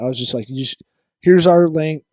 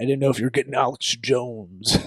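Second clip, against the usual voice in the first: put-on ranting radio host voice, quieter; 3 semitones lower, 6 dB quieter than usual. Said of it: "I keep doing that voice".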